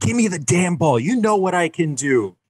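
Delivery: very high-pitched, livid, furious scream. Retelling a Super Bowl sound bite of a player yelling at his coach: imitating Jerry Rice screaming. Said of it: "Jerry Rice just screaming at his coach".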